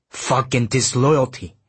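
plain

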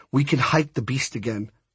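ordinary delivery, nothing marked

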